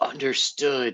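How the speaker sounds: hushed, whispered under the breath. Role-play character whispers back to Karen: whispering. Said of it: "he'll whisper back".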